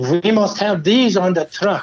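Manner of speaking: put-on German-accented insistence. Retelling what he told the styling guys, in a German accent. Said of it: "in this German accent".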